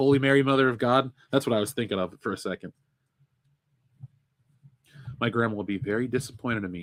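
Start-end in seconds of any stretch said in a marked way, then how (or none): none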